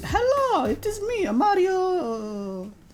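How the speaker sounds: very high, swooping sing-song, name drawn out. Saying hello as a joke at the start: Mario voice. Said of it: "You just said hello like Mario".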